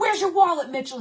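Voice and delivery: mock furious, angry yelled shout. Retelling confronting a man she suspects of theft, retelling an angry yell. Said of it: "And all this anger came out".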